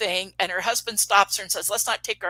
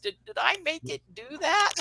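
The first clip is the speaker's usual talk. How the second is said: trembling, stammered, high, quaking voice in shock; 7 semitones higher, 4 dB quieter than usual. Retelling a woman's question, asked in shock as the light flashed, imitating a quaking voice. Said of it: "her voice quaked".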